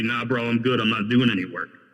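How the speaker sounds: ordinary talk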